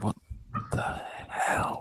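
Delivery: muttered under the breath, whispered. Voicing a character reacting to a strange dog: muttering under breath. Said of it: "I am muttering some".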